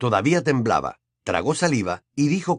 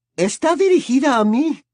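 quavering, trembling voice, pitched very high; 13 semitones higher, 4 dB louder than usual. The aunt answers the uncle's roar, speaking in a trembling voice. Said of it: "con voz trémula".

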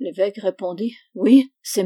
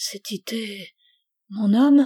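low, quiet, trembling, quavering voice. A woman suddenly speaks to a man whose eyes meet hers, in a low, trembling voice. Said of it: "d'une voix changée, basse, tremblante".

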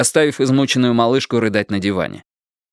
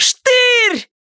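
very high scream; 4 dB louder than usual. A woman struggling in a man's grip, screaming. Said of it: "и закричала".

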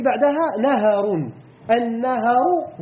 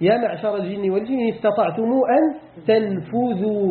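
ordinary talk, nothing marked

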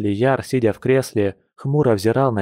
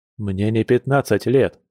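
plain reading voice

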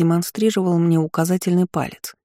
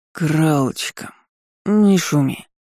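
slurred, tongue-tangled mumble, much slower pace; 2 semitones lower than usual. A husband lying with his eyes closed answers his wife in a slurred mumble. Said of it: "Пробормотал он заплетающимся языком".

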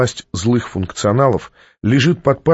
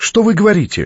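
delighted, joyful cry, very high pitch; 9 semitones higher than usual. A man reacts to what he has just been told, joyfully exclaiming. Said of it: "радостно воскликнул Котя".

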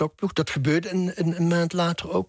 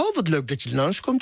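plain

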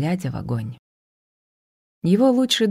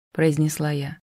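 ordinary delivery

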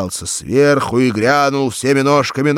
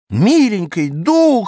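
pleading moan, higher pitch; 7 semitones higher, 3 dB louder than usual. The séance participants plead with the spirit in the table, moaning. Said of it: "стонали спириты".

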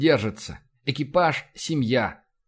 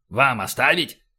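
snide, snarky and sarcastic, mocking tone. Calling after a departing comrade, asked snidely. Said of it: "ехидно спросил Боровский".

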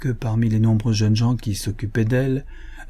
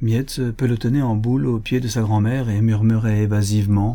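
ordinary delivery

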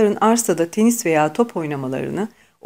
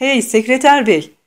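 high, loud shouting; 6 semitones higher, 5 dB louder than usual. Narrating fiction, the president rings a bell and calls after the secretary; shouting. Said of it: "olanca gücüyle çalarak bağırıyordu".

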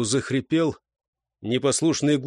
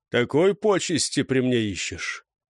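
plain

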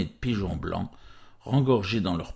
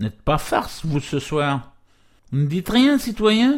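put-on high, loud, tipsy bumbling drunken stammer; 7 semitones higher, 7 dB louder than usual. Near midnight, a staggering man taps another on the belly, stammering. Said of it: "lui dit en bredouillant".

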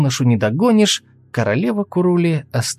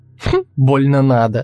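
contemptuous, dismissive little scornful snorting scoff; 3 semitones lower than usual. Narrating Alvis answering Selda's threat, a scornful snort. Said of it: "презрительно хмыкнул Алвис".

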